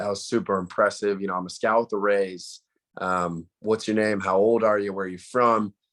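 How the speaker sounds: plain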